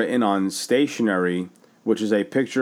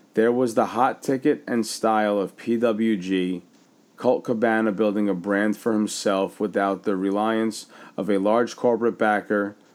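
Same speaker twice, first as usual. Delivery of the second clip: ordinary delivery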